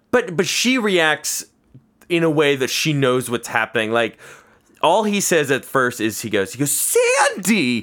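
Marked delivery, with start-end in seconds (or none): 6.7-7.8 high-pitched excited voice, higher. Retelling a film scene where the character calls out: high-pitched Travolta voice. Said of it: "he goes high-pitched in that great Travolta way".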